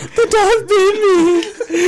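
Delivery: acted, very high, very slow, drawn-out sobbing talk. Retelling what someone said after a dog bit him: imitating someone crying. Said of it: "crying on his little bike".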